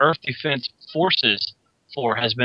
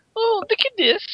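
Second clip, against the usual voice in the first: very high, regal royal voice. Picturing the Queen driving her carriage down the road: Queen impression. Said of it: "I can just see the Queen driving".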